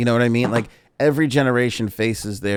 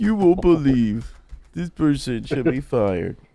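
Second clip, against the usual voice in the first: high, mocking critic voice; 5 semitones higher than usual. Imitating an online critic who will complain about this talk: imitating cancel culture people. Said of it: "That's my cancel culture impression".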